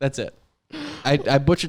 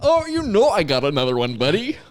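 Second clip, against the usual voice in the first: weird, pitched-up, put-on goofy voice; 5 semitones higher, 3 dB louder than usual. Offering a co-host another story to read, in a weird goofy voice. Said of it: "weird, goofy voice".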